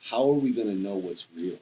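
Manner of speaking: ordinary talk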